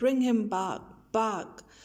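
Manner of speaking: ordinary talk, nothing marked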